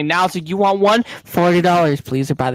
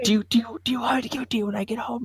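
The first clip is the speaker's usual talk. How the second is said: quiet whisper, much higher pitch; 8 semitones higher, 6 dB quieter than usual. Retelling talking to Sam in a Dollar General aisle, whispering. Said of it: "I'm like whispering near her".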